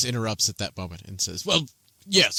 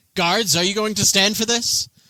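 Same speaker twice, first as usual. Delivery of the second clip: scornful, loud, pitched-up scoff; 9 semitones higher, 5 dB louder than usual. A narrator voices Bakaris the Younger calling on the guards: scoffing Bakaris the Younger. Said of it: "just scoffs and says".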